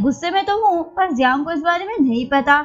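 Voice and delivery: ordinary talk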